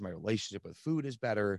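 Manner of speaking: ordinary talk, nothing marked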